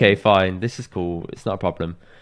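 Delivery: ordinary delivery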